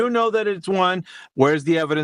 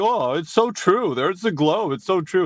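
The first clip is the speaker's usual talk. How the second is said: scornful, derisive, sarcastic voice; 3 semitones higher than usual. Mocking the other debater's belief in a globe: mocking imitation of the other speaker. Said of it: "And you're just like".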